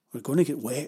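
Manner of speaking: usual speaking voice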